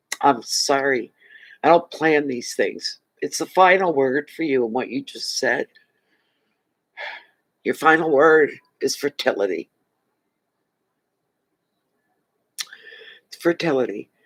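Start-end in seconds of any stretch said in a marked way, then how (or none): 3.2-14.0 choking up, on the verge of crying. Reacting to the other person's final word, getting emotional. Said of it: "I'm getting emotional".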